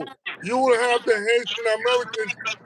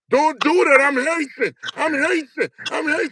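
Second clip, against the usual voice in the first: mock, mild, restrained held-back scream; 4 semitones higher than usual. Retelling a fight where a pinned-down student screams: imitating someone screaming.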